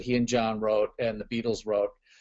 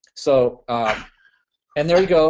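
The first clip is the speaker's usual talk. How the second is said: ordinary talk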